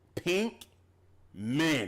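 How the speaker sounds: defiant, loud, high-pitched belted delivery.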